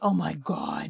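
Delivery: unfiltered, full grungy voice. Showing how sounding in the tea room: full grunge voice. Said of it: "I let the full grunge out".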